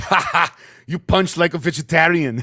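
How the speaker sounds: very loud, slow, deliberate, taunting bellow, word by word. Retelling a movie line as Arnold Schwarzenegger: Arnold Schwarzenegger impression. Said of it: "Schwarzenegger's like".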